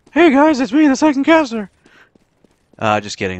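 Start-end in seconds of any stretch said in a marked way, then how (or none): 0.1-1.7 exaggerated, very high, shrill, loud silly put-on voice. Pretending to be a second caster, in an exaggerated put-on voice. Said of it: "I can't do that voice too much longer".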